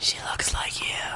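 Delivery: put-on whisper. Recounting a story scene where a man leans in, retelling a whisper. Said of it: "He leans in and whispers".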